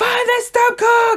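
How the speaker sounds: put-on panicked shouting. Retelling a dad shouting during a leak: imitating dad shouting in panic. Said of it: "he's going".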